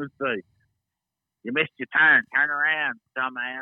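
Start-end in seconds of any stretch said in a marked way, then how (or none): 1.4-3.6 put-on bossy, loud child voice. Imitating a GPS giving driving directions, in a Cartman voice. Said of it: "And stuff like that in the Cartman voice".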